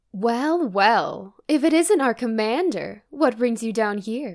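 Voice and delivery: seductive, teasing, sexy and flirty voice. In an improvised scene, greeting the commander, in a sexy flirty voice. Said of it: "i'm gonna do a sexy voice".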